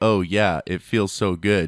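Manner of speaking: digital voice-assistant style delivery. Joking about a voice assistant saying sexy lines: Siri voice. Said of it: "having Siri say".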